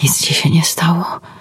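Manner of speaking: hushed whisper. Michał speaks to Edyta after running to her and holding her close, whispered. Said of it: "szepnął".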